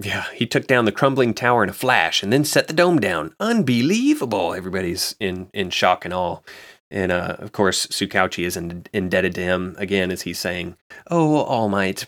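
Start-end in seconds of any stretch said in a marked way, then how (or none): 11.1-12.1 put-on tearful, gushing voice. Recapping a scene, voicing a character thanking the hero, imitating Tsukauchi crying. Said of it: "especially since he's like crying".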